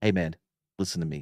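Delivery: steady, soothing, low, calm, hushed voice. Showing how they would talk a man down; low calm mad half-whisper. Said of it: "I'll call it the mad whisper. Not really a whisper".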